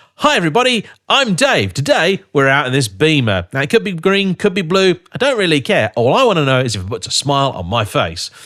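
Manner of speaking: upbeat, lively, engaged presenter delivery. Showing how a car-review presenter should open a video, engaged presenter delivery. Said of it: "You need to be engaged".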